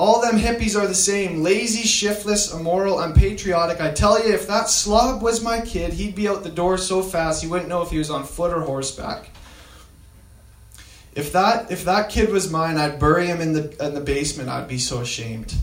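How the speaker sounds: ordinary talk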